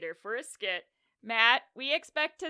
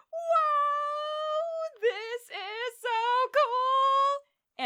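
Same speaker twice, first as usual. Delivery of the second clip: very high, very slow, long drawn-out "whoa" yell; 5 dB louder than usual. Retelling a sketch where a character comes through and yells: Aang yelling. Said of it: "and he yells".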